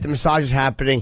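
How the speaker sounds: plain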